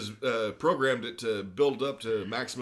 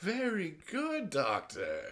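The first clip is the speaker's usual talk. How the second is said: mock condescension, higher and quieter; 7 semitones higher, 4 dB quieter than usual. Retelling a villain praising a doctor: imitating a condescending tone. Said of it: "Just condescending to him".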